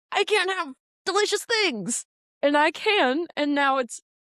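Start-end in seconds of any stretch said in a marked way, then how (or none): 0.1-2.0 mock complaining tone, higher pitch. Imitating the other speaker complaining about their stomach: imitating the other speaker complaining. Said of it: "And so you're like".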